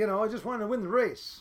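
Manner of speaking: usual speaking voice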